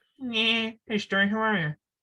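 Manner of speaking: cartoon sitcom father voice. Asked for a Family Guy voice, the speaker does a Peter Griffin impression. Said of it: "very few people can do Peter".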